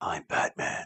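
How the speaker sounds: low, whispered voice. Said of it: "All Michael Keaton did was whisper".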